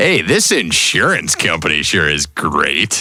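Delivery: sarcastic, sing-song, insincere, swooping line read. Retelling how he delivered a commercial line for the director, retelling a sarcastic line read. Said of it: "I was always doing it sarcastically".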